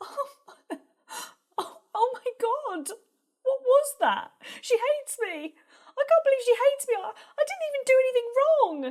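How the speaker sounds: very high, upset, tearful crying. A character alone after being torn into by her partner's mum, crying. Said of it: "why are you crying?".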